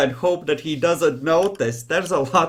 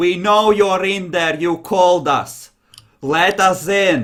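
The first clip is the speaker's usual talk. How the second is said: deliberate put-on German accent, very slow, drawn out; 3 semitones higher, 4 dB louder than usual. Voicing a voice at the door, with a German accent. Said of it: "There is a voice now with a German accent".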